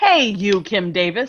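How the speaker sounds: put-on American accent. Mocking how a non-fluent english speaker did not greet someone, put-on american accent. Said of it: "in this perfectly American accent of mine".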